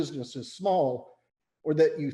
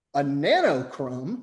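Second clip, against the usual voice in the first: ordinary talk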